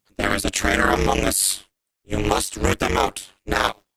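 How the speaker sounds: robotic voice through a vocoder. Speaker voices Slash for the listener, in Slash's robotic vocoder voice. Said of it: "change my voice into a like robotic voice".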